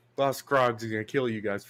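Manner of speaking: ordinary talk, nothing marked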